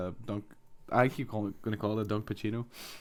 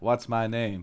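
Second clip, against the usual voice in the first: flat, boring monotone, no lift at all. Showing how the first line sounds, in a flat, boring delivery. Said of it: "Like it's pure boring and flat".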